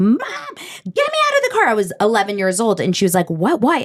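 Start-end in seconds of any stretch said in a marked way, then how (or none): 0.0-1.7 put-on very high, shrill, swooping, top-of-lungs child's scream. Recalling being eleven and spotting a TV show's car, retelling a scream. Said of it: "I screamed at the top of my lungs".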